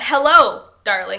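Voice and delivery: loud, clear "Hello" then deliberate comma pause. Pronouncing the comma in a greeting, with a clear pause after Hello. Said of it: "I'm doing that pause. I'm pronouncing the comma".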